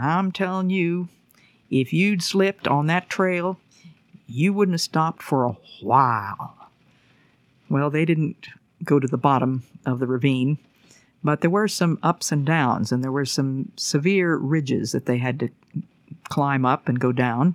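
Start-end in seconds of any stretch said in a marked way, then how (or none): 0.0-6.5 put-on Southern Georgia accent. Narrator retells what Lars said: Lars's Georgia accent. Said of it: "in his Georgia accent".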